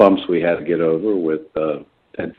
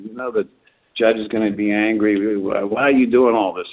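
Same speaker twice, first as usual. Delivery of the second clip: mock yelling, higher; 4 semitones higher than usual. Retelling a film scene where a lawyer yells at his client: imitating a lawyer yelling. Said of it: "he's sort of yelling at him".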